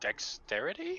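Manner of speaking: dexterity rising high and slow. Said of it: "Question mark?".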